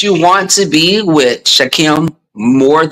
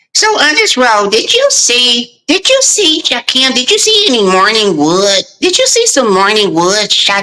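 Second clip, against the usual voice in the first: put-on woman's voice, higher pitch; 7 semitones higher than usual. Retelling what she asked Shakim over there, in your Lady Dimples voice. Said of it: "this is my Lady Dimples voice".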